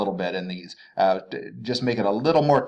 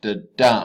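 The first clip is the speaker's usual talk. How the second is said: da unstressed, dum stressed; 4 dB louder than usual. Explaining the iamb as unstressed then stressed, da-dum with stress on dum. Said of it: "an unstressed syllable followed by a stressed syllable".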